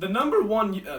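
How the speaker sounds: cracked voice, breaking in the middle. After talking into a camera for a long time, the speaker's voice cracks. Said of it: "that was a horrible voice crack".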